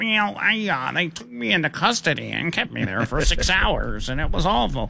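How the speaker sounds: guilty-sounding, hesitant voice. Imitating the man who damaged the reflecting pool: imitating a guilty-sounding voice. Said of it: "Just listen to this guy's voice, and you can tell he's guilty".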